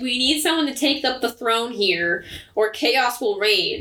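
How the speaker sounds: ordinary talk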